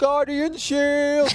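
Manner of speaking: mock very high, all-out screamed yell. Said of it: "I'm screaming".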